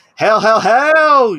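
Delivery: loud, slow, deliberate delivery, every "hell" stretched long. Answering whether they will play later, sounding like The Rock. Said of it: "you almost sounded like The Rock".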